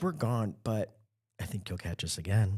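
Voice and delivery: mock-seductive, sultry, sexy put-on voice. Recalling a mom's seasonal voicemail greeting, imitating a sultry, sexy voice. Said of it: "his mom had the hottest voice".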